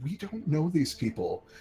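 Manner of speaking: hushed, confidential stage whisper. Voicing a character in a tabletop game who speaks privately to a companion, half-whispering. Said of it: "kind of whispers to him".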